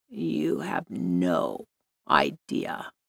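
deep, hushed, gravelly drawl, very slow. A woman speaks to Blake as he walks past her, gravelly voice. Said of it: "the woman said in a gravelly voice".

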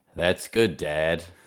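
heavy, dry, very sarcastic tone. Retelling a TV scene, a daughter answering her dad, mock-sarcastic. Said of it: "Really sarcastically".

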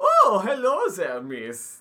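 fake, bad Swedish accent, very high, loud, shrill. Retelling a film scene, the speaker voices the village baker's greeting in a bad Swedish accent. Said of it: "That's not even remotely".

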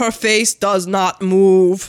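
deep fake German accent. Describing a woman they're suspicious of, imitating her deep German accent. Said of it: "She talks like this".

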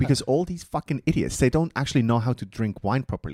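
furious tirade. Retelling a wine producer's complaint about collectors: imitating an angry man. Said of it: "he was so angry about it".

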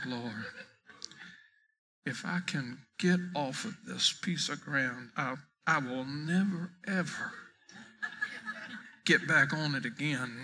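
put-on mutter under breath. Retelling a long walk on a golf course: imitating muttering under breath. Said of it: "And under my breath".

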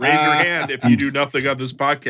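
usual speaking voice

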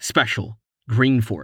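ordinary delivery

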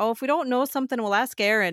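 put-on slight Scottish accent. Quoting a grandmother from Scotland saying they'd ask Erin, little Scottish accent. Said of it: "my grandma would say in her little Scottish accent".

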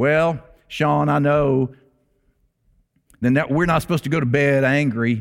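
put-on East Tennessee accent, older-sounding voice. A pastor retells what Bernice said to him about anger, East Tennessee accent. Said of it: "through the East Tennessee accent".

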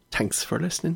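botched Scottish accent drifting Irish. Signing off the episode to listeners: bad Scottish accent. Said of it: "that's Irish. Damn it".

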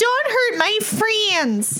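shrill, very high yelling. Declaring the character's action in a fight, yelling as Bertha. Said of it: "Bertha's gonna yell out".

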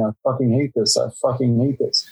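imitated, put-on whisper. Retelling what a sweating actor muttered under his breath: imitating Paul Giamatti whispering. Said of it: "he kept whispering".

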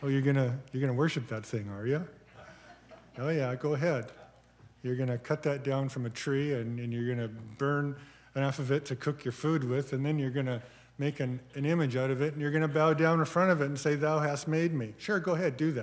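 play-acted voice, dry, taunting, thick with sarcasm. Paraphrasing a sarcastic Bible passage about worshipping idols: imitating sarcasm. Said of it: "I love it when the Lord speaks sarcastically".

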